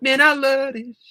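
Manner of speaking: high, loud, ecstatic shout. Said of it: "My voice is starting to give out".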